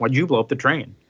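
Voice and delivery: ordinary talk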